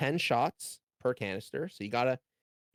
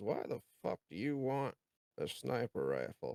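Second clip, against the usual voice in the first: distrustful, suspicious character voice; 7 dB quieter than usual. Voicing Griff squinting suspiciously at a player: suspicious character voice. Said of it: "looks at you and kinda squints and says".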